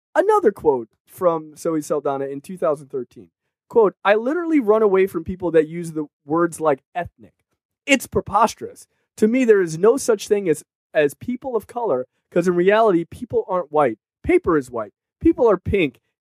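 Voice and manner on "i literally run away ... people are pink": normal talking voice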